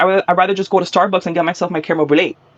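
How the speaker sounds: ordinary talk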